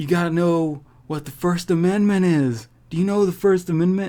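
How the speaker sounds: put-on high drunken lecturing voice. Retelling a video of a man being arrested: imitating a drunk man. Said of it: "all drunk".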